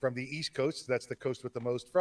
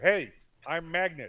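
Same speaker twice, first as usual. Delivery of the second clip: half-yelled, mild yell; 3 semitones higher than usual. Showing another speaker how to say the intro line: yelling. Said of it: "like you're yelling at uh, that woman over there".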